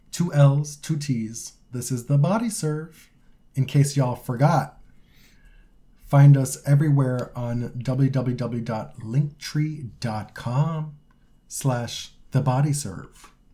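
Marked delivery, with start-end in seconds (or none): 1.7-13.3 slow, calm public radio announcer voice. Co-host closing the podcast episode with the show's links: NPR voice. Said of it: "Is that your NPR voice?".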